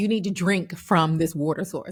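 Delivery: ordinary delivery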